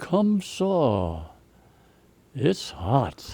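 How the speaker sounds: very slow, lazy Texas drawl, "saw" stretched out. Retelling what a first sergeant said under shellfire: imitating a Texas drawl. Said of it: "he said in a Texas drawl".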